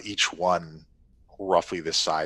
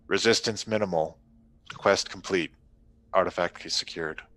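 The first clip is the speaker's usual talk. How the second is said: flat, level, toneless robotic monotone. Voicing a fighter reporting to its leader: flat monotone voice. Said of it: "repeats in a monotone voice".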